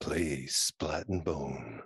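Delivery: very low, seductive, sultry sexy voice. Asked by a co-host to say the new tagline: sexy voice. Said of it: "Say it in your sexy voice".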